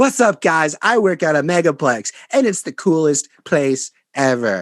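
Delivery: wooden, unconvincing, slow, stilted line reading. Mocking an actor's narration lines in a movie, imitating unconvincing acting. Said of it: "they do not sound convincing".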